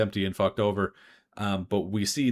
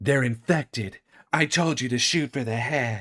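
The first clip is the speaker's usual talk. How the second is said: put-on cool, nonchalant cool-girl voice; 3 semitones higher than usual. Retelling a cosplayer dressed as Jill Valentine delivering a game line; Jill Valentine cool-girl voice. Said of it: "she does her very best cool girl impression".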